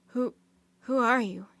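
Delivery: hoarse, rough, rasping voice. Narrating a story, an older knight asks the strangers who they are, in a hoarse voice. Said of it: "he asked in a hoarse voice".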